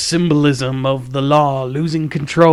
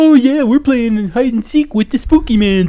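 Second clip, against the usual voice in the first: mocking teen voice, higher and louder; 10 semitones higher, 5 dB louder than usual. Mocking the jackass teenagers in the movie: imitating jackass teenagers. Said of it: "a very accurate portrayal of, of jackass teenagers".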